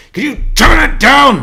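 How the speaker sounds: very loud, shrill, high, angry shout. Imagining how a man scowled and demanded the music go down: imitating a scowling demand. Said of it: "he fucking scowled over at them and pounded his steering wheel".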